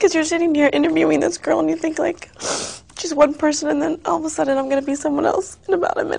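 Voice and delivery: talking through tears. Answering the interviewer about why she is crying: crying while talking. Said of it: "Tell me why you're crying".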